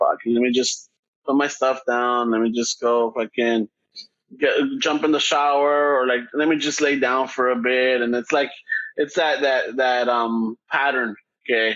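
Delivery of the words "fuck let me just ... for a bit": low, slow, worn-out, exhausted grumble. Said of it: "I'm like".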